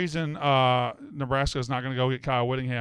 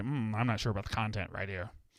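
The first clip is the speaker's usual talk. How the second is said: mocking, nerdy put-on voice; 3 semitones lower, 8 dB quieter than usual. Mocking how commenters talk about content: mocking nerdy salesperson voice. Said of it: "You sound like a fucking nerdy, nerdy-ass".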